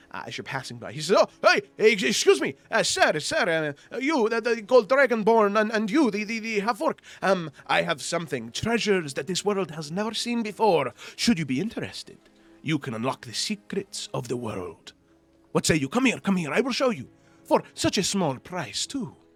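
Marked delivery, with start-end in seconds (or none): 1.1-19.1 heavy dialect laid on thick, high and loud. A game master voices an elf calling out to two passing adventurers, in a thick dialect. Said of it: "speaking in a thick dialect".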